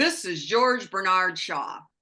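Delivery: otherworldly, ghostly spirit voice. Recounting a spirit voice in the corner of the room, in a booming George Bernard Shaw spirit voice. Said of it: "This voice boomed out".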